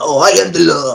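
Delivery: slow, rough, ridiculing drawl with words dragged out. Retelling a movie character mocking an actor's line: mocking Stallone impression. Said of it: "he's making fun of Stallone".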